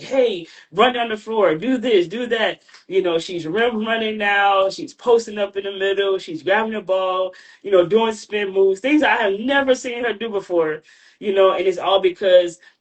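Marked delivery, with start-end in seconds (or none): 0.0-2.6 brisk coach voice, calling out. Retelling coaching a player on the court: imitating own yelling at a player. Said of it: "I'm yelling at her".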